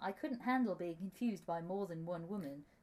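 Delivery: ordinary talk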